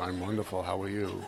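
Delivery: very low, soft, calm and serene voice. Describing how people greet others, mimicking them in a put-on low, serene voice. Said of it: "You have that low, serene voice".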